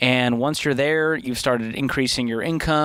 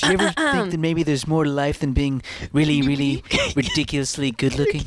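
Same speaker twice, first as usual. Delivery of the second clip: put-on fashion model voice; 2 semitones higher than usual. Reading a quote after being urged to do the Zoolander accent. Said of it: "the Zoolander accent".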